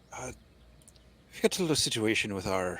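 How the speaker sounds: attempted Scottish accent drifting into an Irish one. A player speaks in character to someone just woken, in an attempted Scottish accent, sounding Irish. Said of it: "I'm I'm trying to do Scottish, but it's coming out Irish".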